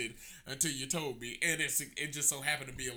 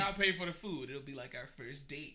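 plain

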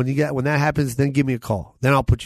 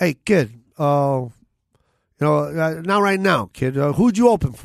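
put-on tough-guy gangster voice; 3 semitones higher than usual. Retelling what a man said to him thirty years ago, in a mobster voice. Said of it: "I'm doing like a mobster voice right now".

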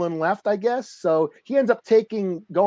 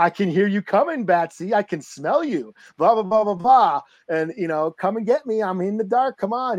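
goading, mocking, taunting trash-talk jeer. Retelling a comic where the villain taunts Batman: imitating Joker taunting. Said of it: "talking shit to Batman".

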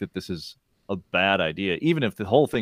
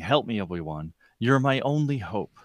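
put-on yelling or pleading voice; 3 semitones higher than usual. Describing the Princess Leia projection from R2-D2, quoting her: mock-yelling plea. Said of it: "she's yelling or pleading".

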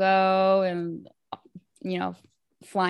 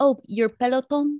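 put-on Spanish accent, pitched up; 6 semitones higher, 4 dB louder than usual. Saying a product name the way they always want to: Spanish accent. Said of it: "I wanna say it in, like, a Spanish accent".

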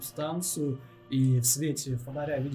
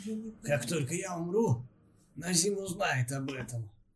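put-on dwarf voice, higher pitch; 3 semitones higher than usual. In a role-play, the storyteller voices a captive dwarf pleading with his captors, in dwarf prisoner character voice. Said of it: "так прикидываю, он примерно какого роста вообще? Двор. Ну, двор, да, то есть метр с чем И да. он весь иссушен".

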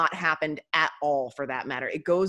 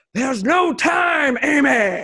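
loud, very slow, drawn-out, big dramatic delivery; 7 semitones higher, 9 dB louder than usual. Retelling a movie scene where Charlie cuts Amy off: dramatic Captain Kirk delivery. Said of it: "like Captain Kirk, like, it's so, he's so dramatic".

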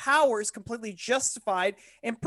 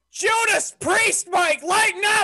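outright loud, high, drawn-out yelling; 9 semitones higher, 5 dB louder than usual. Reacting to the other speaker: yelling. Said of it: "I'm not even drinking and I'm yelling!".

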